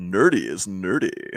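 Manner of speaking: very deep, low, hushed, soft put-on voice. Suggesting a sound bite, the speaker gives the phrase the deep voice treatment. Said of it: "give it the deep voice treatment".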